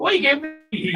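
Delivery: put-on Scottish accent. Reading out an absent man's words this evening, assuming he is scottish, in a put-on scottish accent. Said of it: "I'm just going to assume that he's definitely Scottish".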